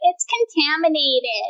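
put-on teasing, babyish, girly little girl voice. Recalling how a former roommate used to tease them, the speaker does a little girl's voice. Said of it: "he would do the little girl's voice and be like".

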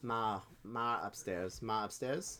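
attempted put-on Boston accent. Two people trying out accents, one attempting a Boston accent. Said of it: "I can do a Boston accent".

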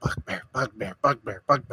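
very hushed, low, barely-there murmur. A player describes backing away, then going up to them: very quiet voice. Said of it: "just very quietly go up to them".

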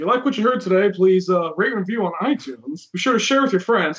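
smooth, easy, statesmanlike delivery. Imagining an ex-president closing his own podcast: Obama impression. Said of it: "just hear him say".

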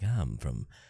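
put-on low, quiet, gnarling New Orleans accent. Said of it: "the gnarling sound, like this".

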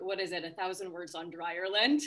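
plain

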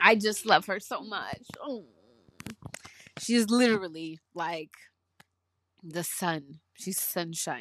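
tearful crying through the words, voice breaking. Speaker, moved to tears talking about someone she loves: crying while speaking. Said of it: "I'm crying".

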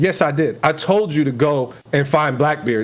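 ordinary talk

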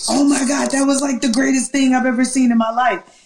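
high, jubilant, excited acted-out scream. Recalling jumping up and down as the game ended: retelling excited screaming.

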